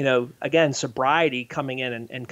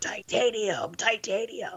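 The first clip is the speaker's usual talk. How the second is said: raspy impression, pitched higher and quieter; 8 semitones higher, 5 dB quieter than usual. Recounting a body-scanner encounter, imitating Nick Nolte's raspy voice. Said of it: "I hear this raspy voice going".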